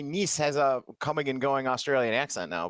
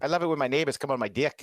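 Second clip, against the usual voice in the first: put-on New Zealand accent. Trying out a put-on new zealand accent on a sentence, put-on new zealand accent. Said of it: "There you go".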